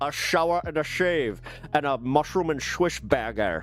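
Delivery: imitated Scottish accent. Retelling a friend ordering Burger King on a dare: Sean Connery voice. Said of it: "in Sean Connery's voice".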